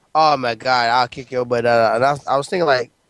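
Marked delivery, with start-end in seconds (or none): none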